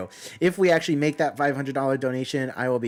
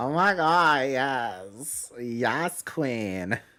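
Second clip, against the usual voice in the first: put-on Valley Girl accent, drawn-out "yes". Asked to use that tone when meeting in December, busting out a Valley Girl accent. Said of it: "I'll bust out my Valley Girl accent".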